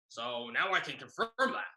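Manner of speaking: rough, throaty teacher voice.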